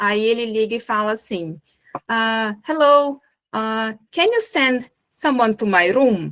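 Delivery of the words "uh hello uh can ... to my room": put-on thick, strong Indian accent on English. Telling a joke where a man phones a hotel reception, imitating his strong Indian accent. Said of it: "E ele tem um sotaque bem indiano".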